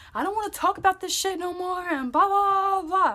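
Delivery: mock loud shouting. Retelling a boyfriend's angry words during an argument: imitating him yelling. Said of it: "He's getting loud".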